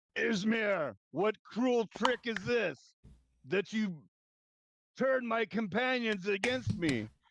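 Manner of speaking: furious raging shout, very high-pitched. Voicing a raging barbarian attacking a former companion: raging yell. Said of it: "he's gonna yell".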